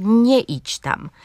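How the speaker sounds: nie idź tam slow, stress on NIE.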